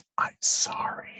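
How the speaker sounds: slow, soft, breathy whisper. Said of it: "I'm like".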